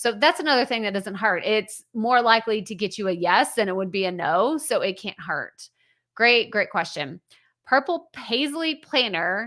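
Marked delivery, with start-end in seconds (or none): 7.6-9.5 very slow, deliberate, drawn out word by word. Reading out the name of the person who asked a question, said really slowly. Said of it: "I have to say it really slow".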